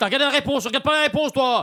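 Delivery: high-pitched shout. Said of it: "crie pas, on t'entend".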